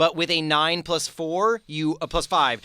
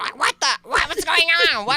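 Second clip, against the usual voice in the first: squeaky, very high, bewildered goblin voice; 11 semitones higher than usual. Speaker voicing the goblin in the woods, in a confused goblin voice. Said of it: "you can hear the goblin and she going".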